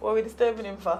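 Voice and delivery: ordinary talk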